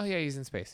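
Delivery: mock matter-of-fact certainty. Retelling how a friend answered about a spaced-out man: imitating someone sounding certain. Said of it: "in certainty".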